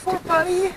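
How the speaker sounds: put-on high, cooing baby talk.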